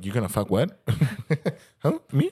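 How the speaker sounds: lively, animated, swooping up-and-down delivery. Imagining Robert listening to this and reacting: imitating Robert. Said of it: "Robert's listens to, he's like".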